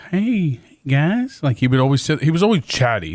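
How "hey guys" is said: put-on high-pitched, creepy old-man voice. Describing a creepy old man who rode past on a scooter: Herbert the Pervert type voice. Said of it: "he had like a Herbert the Pervert type voice".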